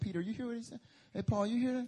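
acted shocked exclaiming. Acting out the disciples' reaction to Jesus' words: imitating shocked disciples. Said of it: "They were, like, shocked".

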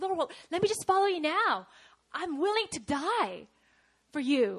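bursting with excitement, eager. Retelling a Bible scene, voicing the disciple Peter: imitating Peter, excited. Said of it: "Peter's so excited".

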